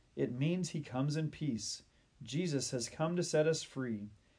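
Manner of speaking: plain reading voice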